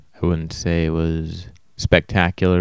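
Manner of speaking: plain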